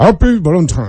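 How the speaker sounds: put-on Russian accent. Asked how to say happy Valentine in Russian, answering in a Russian accent. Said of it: "But with a Russian accent".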